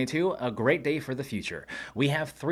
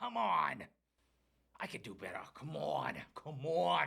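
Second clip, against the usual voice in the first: hushed, tough-love Boston accent; 10 dB quieter than usual. A time-traveling newscast host, flubbing the intro, urges themself on: Boston accent pep talk. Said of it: "I gave myself a Boston accent".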